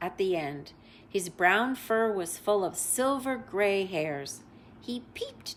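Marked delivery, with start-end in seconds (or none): none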